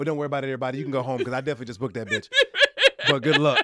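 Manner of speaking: put-on sarcasm laid on thick, loud and swooping. Retelling what he told the other guys before he booked it, retelling a sarcastic remark. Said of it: "I was being sarcastic as fuck".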